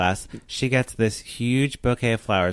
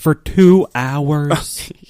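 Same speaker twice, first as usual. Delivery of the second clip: very loud, play-acted furious, pissed-off shouting; 4 semitones higher, 8 dB louder than usual. Retelling a movie scene where the boyfriend questions her: imitating an angry boyfriend. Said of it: "He gets so pissed".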